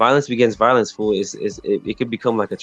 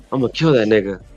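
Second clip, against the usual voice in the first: put-on muttering under breath. Retelling what someone said while running past: imitating a mutter under breath. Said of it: "I hear him say under his breath".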